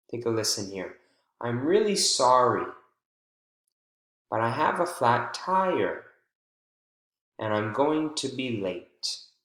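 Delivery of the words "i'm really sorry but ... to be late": pitch jumps on sorry, tire, late, then slight fall. Demonstrating thought-group intonation to learners, voice jumping on the focus word. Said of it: "the voice jumps on the focus word and then falls slightly".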